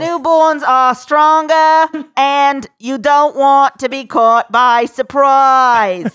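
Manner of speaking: put-on 1960s Boston politician accent. Quoting how someone delivered his lines, JFK impression. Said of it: "It was full JFK".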